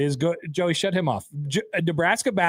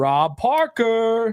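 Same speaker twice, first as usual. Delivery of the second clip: mock announcer voice, pitched higher; 7 semitones higher than usual. Imitating how the show's opening announces a name: imitating the show's announcer. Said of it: "Why do you say it like that?".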